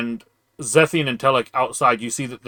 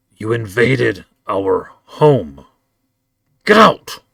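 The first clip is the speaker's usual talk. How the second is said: loud, rising, swooping snarled growl; 6 dB louder than usual. Game master voicing a woman who stands and looks at the players, growling. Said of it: "she growls".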